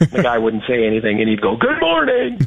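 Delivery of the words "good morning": put-on booming voice, pitched very high. Retelling how a man greeted another man every morning, in a big booming voice. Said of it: "big booming voice".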